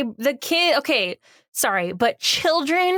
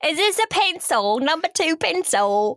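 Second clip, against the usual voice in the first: bad, terrible, put-on fake English accent; 4 semitones higher than usual. Acting out a school scene for friends: terrible English accent. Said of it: "in my like terrible English accent".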